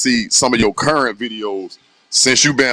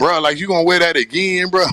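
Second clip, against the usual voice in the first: mocking, teasing tone, pitched up; 6 semitones higher than usual. Retelling how a family member made fun of a shirt: imitating a family member mocking. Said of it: "somebody in my family try to play me like".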